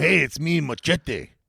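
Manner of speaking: put-on tough-guy voice. Doing a Danny Trejo impression in an impressions game: Danny Trejo impression as Machete. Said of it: "the only one that could do this impression".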